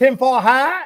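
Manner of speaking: full put-on Boston accent. Retelling what an old female bartender said, full Boston accent. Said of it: "Full Boston accent".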